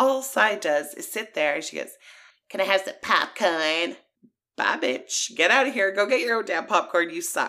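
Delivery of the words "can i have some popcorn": put-on obnoxious delivery. Retelling how someone acted while another person cried: imitating an obnoxious tone. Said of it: "the most obnoxious way possible".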